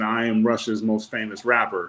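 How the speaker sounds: ordinary talk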